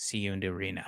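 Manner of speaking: very low, hushed, barely audible half-whisper. Retelling what he half-whispered as he passed you, in a half-whisper. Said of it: "he whispers".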